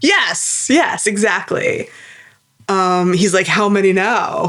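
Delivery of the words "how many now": put-on annoyed villain voice. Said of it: "so deeply annoyed".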